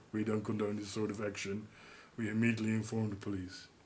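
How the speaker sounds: low, flat, droning deadpan monotone. Quoting the man who pulled them into a back room, in a weird monotone voice. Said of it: "He had this very weird monotonous, monotonous voice".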